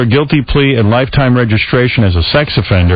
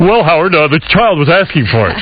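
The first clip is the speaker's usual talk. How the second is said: pitched-up on-air radio announcer voice; 6 semitones higher than usual. Joking about a man who won't come on air, the speaker imitates him: good radio voice. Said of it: "he has a real good radio voice. He'll be like".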